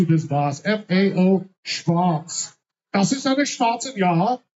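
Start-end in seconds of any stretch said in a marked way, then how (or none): 0.6-2.6 each letter spelled out slowly and drawn out.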